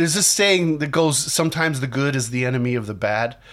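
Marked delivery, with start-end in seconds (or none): none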